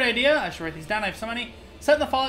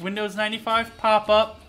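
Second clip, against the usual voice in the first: plain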